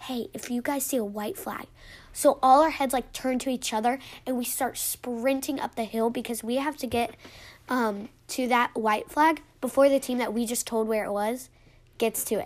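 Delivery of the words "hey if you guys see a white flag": put-on whisper, quieter than surrounding speech. Retelling what a man whispered to his team, acting out the whisper. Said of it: "snaps to them and then whispers, he's like".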